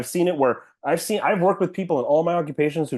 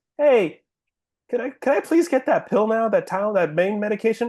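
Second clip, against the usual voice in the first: put-on meek, courteous, pitched-up voice, strained with pain; 6 semitones higher than usual. Retelling asking hospital staff for pain medication: imitating own polite request in pain. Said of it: "I was in such severe pain, but I was still saying this".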